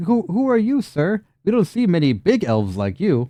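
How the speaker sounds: put-on high-pitched small child voice. Narrator voices a small child walking up to the party, in a small child voice. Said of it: "So a small child".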